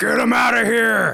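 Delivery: calling out, high and rough. Yelling up at the others standing on the platform: yelling. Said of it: "I'm just gonna yell out".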